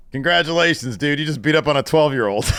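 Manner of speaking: put-on nonchalant, casual tone. Retelling a reply to a threat: imitating a nonchalant reply. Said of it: "as nonchalantly".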